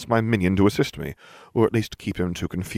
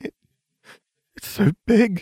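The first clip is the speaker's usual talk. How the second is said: stuttering out the words; 13 semitones higher than usual. Facing a horse-sized beast, a companion speaks up, stuttering. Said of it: "he stuttered".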